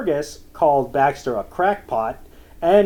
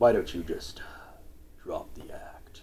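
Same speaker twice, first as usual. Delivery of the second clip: put-on deep actor voice, lower and quieter; 11 semitones lower, 14 dB quieter than usual. Quoting a character line in a Keith David impression. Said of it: "is that your Keith David impression?".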